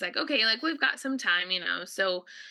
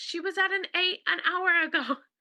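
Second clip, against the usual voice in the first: very high play-acted yelling; 9 semitones higher than usual. Retelling the midwife calling out to the nurses: imitating someone yelling. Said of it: "yelled into the room".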